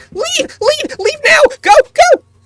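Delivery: squeaky, very high, very loud shout. Voicing something hidden under a chef's hat: loud squeaky voice. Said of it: "a very loud squeaky voice".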